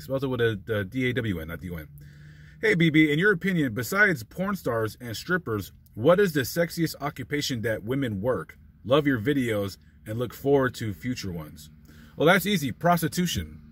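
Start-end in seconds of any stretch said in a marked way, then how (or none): none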